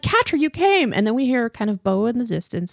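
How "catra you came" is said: put-on, overjoyed, very high-pitched cry. Retelling a scene where Adora is so happy: imitating a happy character. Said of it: "Adora's so happy. She's like".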